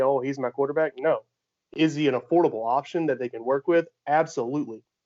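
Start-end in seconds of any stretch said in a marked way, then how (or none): none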